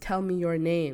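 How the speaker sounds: usual speaking voice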